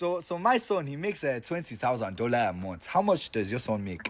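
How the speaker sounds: put-on Nigerian accent. Doing an impression of a Nigerian dad arguing with a Jamaican dad about their sons. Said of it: "Impression of a Nigerian dad".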